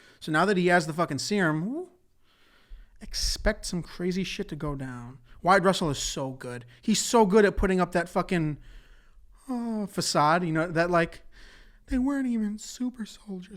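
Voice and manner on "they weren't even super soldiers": passive, detached delivery, pitched a bit high. Quoting a line from the show: passive John Walker impression. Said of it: "that's the voice I hear it in".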